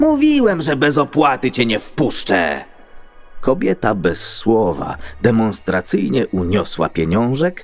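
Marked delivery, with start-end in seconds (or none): 0.0-2.6 loud, high, swooping yell. A man shouts in greeting to a woman walking back toward him: shouted. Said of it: "krzyknął do niej".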